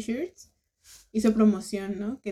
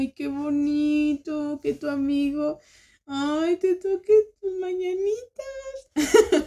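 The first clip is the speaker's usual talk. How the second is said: moved, melting, high, drawn-out tender gush; 6 semitones higher than usual. Retelling a reaction to a birthday serenade on guitar: imitating a tender, moved gush. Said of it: "no sabes si reírme o morir de ternura".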